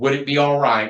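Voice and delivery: ordinary talk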